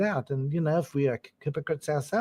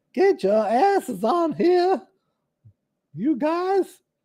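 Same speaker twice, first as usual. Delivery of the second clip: put-on Southern belle accent, very high and loud; 12 semitones higher, 7 dB louder than usual. Host inviting two listeners to join the chat: attempted southern belle accent. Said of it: "my American attempt to be American Southern Belle".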